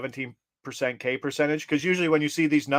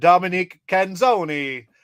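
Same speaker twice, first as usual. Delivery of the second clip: bad, terrible, put-on Italian accent; 5 semitones higher, 5 dB louder than usual. Host announces a pick's name in a terrible Italian accent. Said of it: "without a terrible Italian accent".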